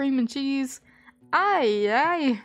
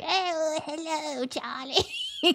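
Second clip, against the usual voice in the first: put-on swooping, sing-song cartoon granny voice; 4 semitones higher, 4 dB quieter than usual. Quoting an old favorite scene, imitating the grandma from Smiling Friends. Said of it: "the grandma from that one episode of Smiling Friends, though, where she's like".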